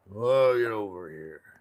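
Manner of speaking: put-on whiskey-soaked old man voice. Imitating how his grandfather talked, in a whiskey-soaked voice. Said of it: "That's the way he talked".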